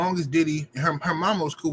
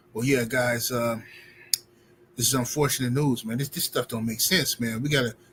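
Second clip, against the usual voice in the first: acted meek, tame, submissive delivery, low in pitch; 4 semitones lower than usual. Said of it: "docile tone".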